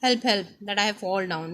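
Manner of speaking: plain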